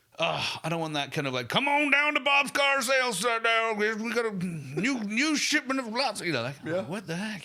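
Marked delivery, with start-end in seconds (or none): 1.5-6.2 put-on American accent, much higher, slower. Mimicking a car-sales pitch people fear in videos: American accent impression. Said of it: "That was my American impression".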